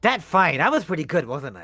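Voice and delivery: cheery, bright, self-pleased, beaming tone. After a fight, a character speaks to a companion with a big smile. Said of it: "He says with a big smile".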